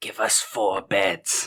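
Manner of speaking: stage-whispered aside. Asking to whisper an aside to the clerk: whispering aside. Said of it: "on the side just whisper".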